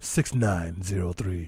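eerie, unsettling, creepy voice. Giving out the call-in phone number: creepy voice. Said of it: "'cause of his creepy voice".

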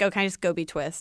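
ordinary delivery

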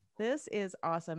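ordinary talk, nothing marked

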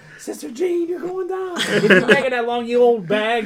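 acted-out, high-pitched yelling like a crowd fan. Retelling a fan yelling at Sister Jean in a video: imitating someone yelling. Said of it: "yelling at her 'cause he's ninety-eight".

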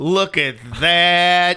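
high, slow mock Southern drawl. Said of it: "I'm sorry for my Southern accent".

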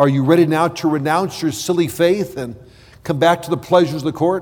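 normal talking voice

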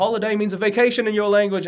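bad Australian accent, high-pitched.

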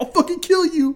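put-on shrill yell pitched way up high. Retelling a scene of a man threatening someone over FaceTime, imitating someone yelling. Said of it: "he's like yelling at him".

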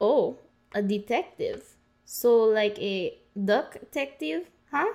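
slow, drawn-out put-on Russian accent. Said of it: "What does a Russian accent have to".

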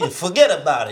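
Italian-accented voice. Joking about accents with friends while baking: italian accent. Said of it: "an Italian".

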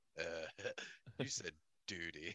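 very low, slow, quiet drawl. Imagining cartoon characters in a scene together: Butthead voice. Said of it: "And Butthead would just be like".

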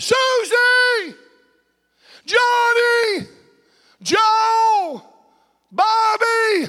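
mock, very high, slow, dragged-out calling yell. Speaker describing God calling out to people, acting out someone yelling out. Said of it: "He's yelling out".

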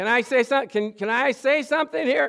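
high, loud, indignant cry.

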